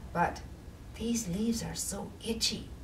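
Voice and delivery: soft, hushed whisper. Narrator reads Charlie trying to fall asleep beside Squirrel, whispering. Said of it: "whispered Charlie".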